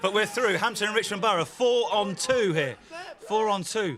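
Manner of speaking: thrilled, excited fan commentary voice.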